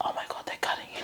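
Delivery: soft, breathy, barely audible whisper. Retelling what a partner whispered during surgery: imitating someone whispering. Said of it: "my partner was just, like, whispering to me".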